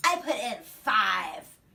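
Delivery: acted snippy, bitchy, loud, very slow and drawn out. Retelling what a customer said about her money: imitating a bitchy tone. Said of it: "just like that, just, like, so bitchy".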